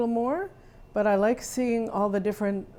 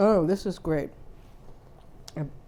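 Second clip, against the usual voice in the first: speaking with mouth full of food; 3 semitones lower than usual. Tasting a dish, the speaker comments while talking with mouth full. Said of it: "I'm talking with my mouth full".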